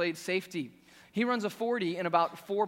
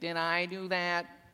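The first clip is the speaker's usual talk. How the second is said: put-on nerd voice, slower. Quoting the nerd's tagline after his disastrous consequences, do your best Steve Urkel impression. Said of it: "That's my best Steve Urkel impression".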